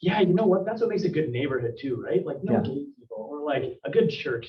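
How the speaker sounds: mocking, sarcastic, swooping sing-song voice. Retelling a rant to a wife in the vehicle: retelling own sarcastic rant. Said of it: "just sarcastically in the vehicle".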